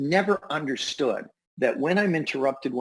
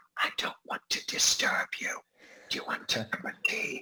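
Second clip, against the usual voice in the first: hushed, soft, breathy, tiptoeing whisper; 3 semitones lower, 7 dB quieter than usual. Retelling how the mother interrupted studying to offer tea: imitating a whisper. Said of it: "she'd come in and she'd whisper".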